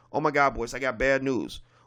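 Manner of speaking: put-on panicked speech. Retelling how a team member calls with bad news: imitating a panicking caller. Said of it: "they'll be like".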